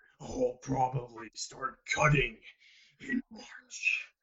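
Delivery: monster voice sinking to a whisper. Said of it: "make you sound like, like a monster".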